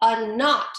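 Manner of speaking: plain reading voice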